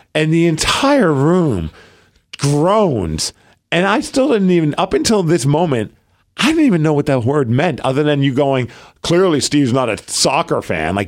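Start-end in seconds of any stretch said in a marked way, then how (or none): 9.0-10.9 mock snooty, condescending tone. Retelling what the other speaker said about soccer: imitating a condescending remark. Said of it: "you totally, like, highbrowed me".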